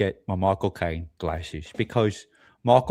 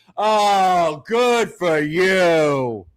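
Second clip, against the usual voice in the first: mock angry ranting, higher and louder; 9 semitones higher, 4 dB louder than usual.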